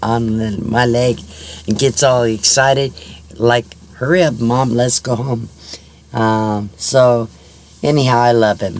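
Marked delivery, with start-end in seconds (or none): none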